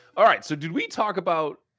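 voice cracking mid-line, jumping up in pitch. Dave starting his video game segment on the show, voice cracking. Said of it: "you hear my voice just crack".

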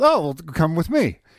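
put-on broken English. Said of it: "this is broken English".

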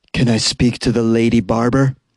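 low-set, husky voice. Reporter tells of a caller asking for the lady barber: low, husky voice. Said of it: "a low, husky voice asks".

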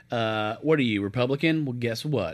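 ordinary talk

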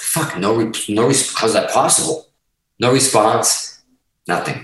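ordinary delivery

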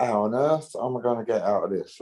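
plain

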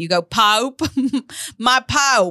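high put-on accent, poop pronounced as pope. Recalling playing the bad guy in a scene, demonstrating a character's accent. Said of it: "That's the accent".

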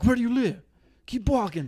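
acted high-pitched bullying yell, big buff guy voice. Retelling a video where a big man yells at a kid: imitating a man yelling. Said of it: "yelling at the kid".

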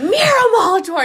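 loud, high-pitched screaming. Retelling being called from the door: imitating Molly screaming a name. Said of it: "screamed my name".

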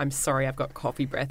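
normal talking voice

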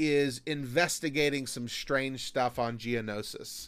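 plain

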